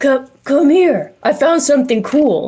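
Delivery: high-pitched, half-whispered shout. Calling Hazel over while people are sleeping nearby, whisper-yelling. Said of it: "I'm like trying to whisper yell".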